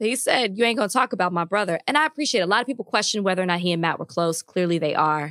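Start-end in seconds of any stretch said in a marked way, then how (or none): none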